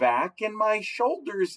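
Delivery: ordinary delivery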